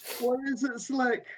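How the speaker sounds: in-character scream. Speaking in character beside churning helicopter blades: in-character scream. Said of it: "we're screaming".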